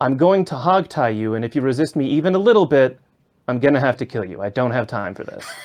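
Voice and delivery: sour, grumpy, completely fed-up voice. Player roleplaying Grim walking up to someone, grumpy Grim voice. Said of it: "in the most grumpy voice".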